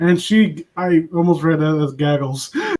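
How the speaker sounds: plain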